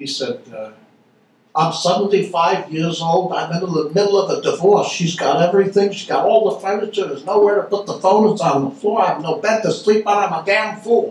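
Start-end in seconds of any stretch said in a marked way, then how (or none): 1.6-11.1 put-on New York Brooklyn accent, pitched up throughout. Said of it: "He had a Brooklyn accent".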